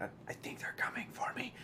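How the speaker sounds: hurried, fast, breathy whisper, barely voiced. Game master voicing a woman who whispers to the player, whispering. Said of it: "And she like whispers to you".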